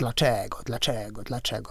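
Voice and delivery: taunting, jeering voice. Retelling how the devil echoes a priest's question back, retelling a mocking echo. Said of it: "Przedrzeźnia".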